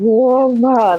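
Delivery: imitated caveman voice. Retelling how a gamer reacted, commenters called it: caveman voice. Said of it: ""Caveman voice."".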